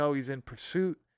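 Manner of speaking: ordinary talk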